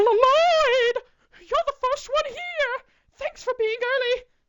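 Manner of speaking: very high, loud, drawn-out name. Reading game dialogue aloud, voicing Monika greeting the first arrival: Monika voice. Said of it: "Channel it".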